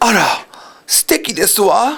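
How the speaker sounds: slow, ladylike, very feminine, delicate delivery. Showing a learner a Japanese phrase: very feminine way of saying it. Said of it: "it's a very feminine way to say it".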